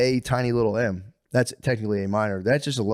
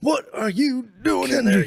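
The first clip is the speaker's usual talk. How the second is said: put-on yelling voice, higher; 13 semitones higher, 3 dB louder than usual. Joking about what to shout after getting caught: Uncle Sam yell. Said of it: "I should've done the Uncle Sam yell".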